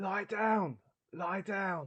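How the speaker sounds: very high, shrill, loud, urgent yell. After hearing something hit the side, calling out to her: shouting to her. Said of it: "I want to shout to her".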